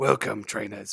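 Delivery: put-on gravelly, rough voice in an almost British accent. Recalling their attempt at an intro voice, grizzled Professor Oak British accent. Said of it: "like a grizzly like Professor Oak almost British accent".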